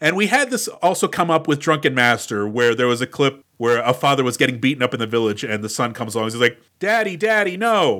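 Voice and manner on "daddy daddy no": grown man's fake child voice, pitched up. Recalling a dubbed film clip, the son calls to his beaten father: grown man's fake child voice. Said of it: "Very clearly a grown man".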